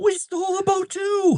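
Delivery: very high, very slow, drawn-out shout. Voicing a character who calls out while holding on: Casimir yelling out. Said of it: "Casimir just yells out".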